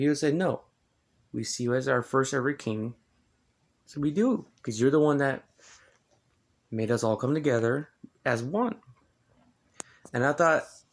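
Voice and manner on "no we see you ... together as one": ordinary talk, nothing marked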